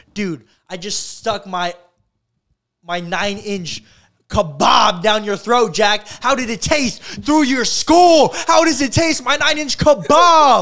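very loud, drawn-out, high rising yell. Retelling a man yelling out a van window at Jack: imitating Fousey yelling. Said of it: "yelling out the window of the van".

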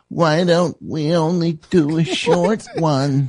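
very slow, high, polite nice-person voice. Retelling what Dudio said about the next session: imitating Dudio's voice. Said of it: "that's exactly how I sounded".

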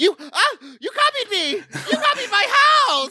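put-on stammering, aghast, very high-pitched. Retelling how the mom reacted to the copied cookie: imitating a shocked, upset mom. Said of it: "she just about lost it".

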